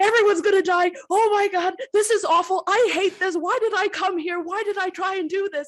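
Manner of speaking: very high, very loud, rushed, shrill, frantic panicked screaming. Voicing a normally quiet character whose inner thoughts burst out: in-character panicked screaming. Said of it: "as John is screaming".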